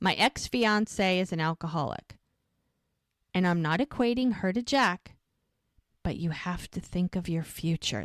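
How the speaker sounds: heartfelt, sincere, earnest voice. Retelling how a man explains his concern to a woman: acting out sincere delivery. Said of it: "he says it with all the sincerity".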